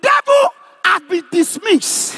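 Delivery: slow, high, loud shouted proclamation. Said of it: "Say louder".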